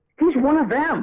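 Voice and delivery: mock very high, shrill, fed-up, exasperated voice. Retelling an office manager looking over at a colleague: imitating exasperated manager. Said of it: "really exasperated".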